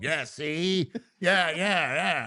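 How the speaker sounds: very slow drawl, every word drawn out. Mimicking the other speaker's impression of him: Al Capone voice. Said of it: "he's talking like Al Capone".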